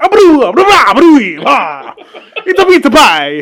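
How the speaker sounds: very loud, ridiculous, swooping outburst. Imitating a movie villain's crazy flip outs: Stromboli impression mid flip out. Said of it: "and he's".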